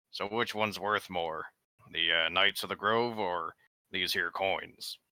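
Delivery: mocking, needling, sarcastic in-character delivery. Playing a character who stacks fake gold coins on a table, rather sarcastically. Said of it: "rather sarcastically".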